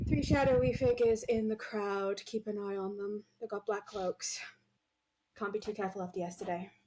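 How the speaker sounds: casual murmur under breath, still audible. Speaker's character talks to those nearby in a crowd, in a casual under-breath murmur. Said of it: "say casually, kind of under my breath".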